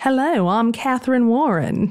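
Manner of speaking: slow, put-on Southern drawl. Picturing a woman introducing herself under a false name: fake southern accent. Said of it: "in her fake Southern accent".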